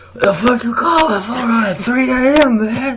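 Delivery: loud, high-pitched and annoyed. Acting out Doc answering a call from Phil Jackson at 3 a.m., do your Doc voice. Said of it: "let me do my Doc voice".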